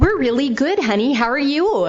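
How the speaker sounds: put-on high, loud Minnesota accent. Retelling weekly phone calls with parents: imitating a minnesota accent. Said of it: "you guys know the Minnesota".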